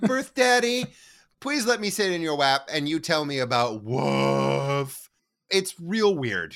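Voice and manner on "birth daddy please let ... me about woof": put-on pleading voice. Retelling how Eiji hugs someone and asks: imitating Eiji begging. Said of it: "hugs him and is like".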